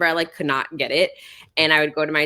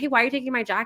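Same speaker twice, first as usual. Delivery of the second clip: put-on high yell; 8 semitones higher than usual. Retelling how mom yelled after dad taking her jacket: imitating mom yelling. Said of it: "yelling after him".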